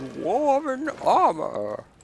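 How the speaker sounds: very high, silly, squeaky, goofy dwarf voice. Not really trying, just giving the line a goofy dwarf voice. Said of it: "I'm giving the goofy dwarf voice".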